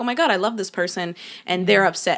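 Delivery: plain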